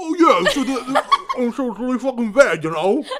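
very loud, shrill, high-pitched put-on Brooklyn accent. Reenacting the same scene as someone from brooklyn: put-on brooklyn accent. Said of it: "they're from Brooklyn".

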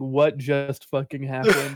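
ordinary talk

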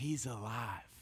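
very quiet, low, hushed, secretive half-whisper. Parent retelling how his son turned and half-whispered to him: retelling a half-whisper. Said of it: "he turns and whispers to me".

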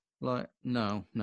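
ordinary delivery

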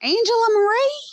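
put-on very high, loud call in a strong Southern accent. Speaker quotes her really southern mother, imitating mother's southern accent. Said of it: "if I quote Mama, it comes out".

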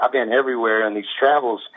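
ordinary talk

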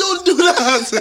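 very high-pitched yell. Retelling shouting at clients who hop the closed gate: retelling a shout. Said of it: "I'm shouting".

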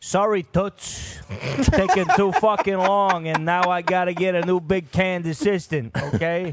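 brusque, loud, high-pitched put-on character voice. Acting out the boss firing an assistant: Jackie Brucia voice. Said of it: "This is what Jackie Brucia sounds like".

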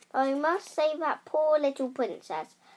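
usual speaking voice

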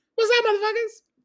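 very loud, very high-pitched holler. Joking about saying y'all, doing a Chris Tucker voice. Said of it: "I sound like Chris Tucker".

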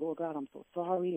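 acted-out tearful boo-hoo sobbing. Retelling an apology prayer to God from the past: retelling own crying. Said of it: "and I just started crying".

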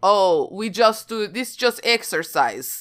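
high-pitched put-on Russian accent. Retelling what soldiers were told, Russian accent. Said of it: "nice accent".

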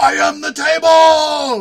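very loud, very slow, high, drawn-out scream. Retelling what a french announcer screamed on air: imitating a scream. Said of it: "literally screamed".

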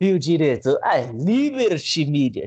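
indignant, fuming sportscaster outburst. Retelling how the commentator reacted to the cut: Galvão impression. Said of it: "essa é a imitação do Galvão".

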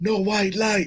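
loud hollering. Speaker retelling yelling instructions about the lights, retelling own yell. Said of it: "I'm yelling".

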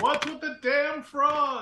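shrill, very high in-character battle-style yell. Yelling out in character on initiative, at enemies in frog robes: yelling in character. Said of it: "I yell out".

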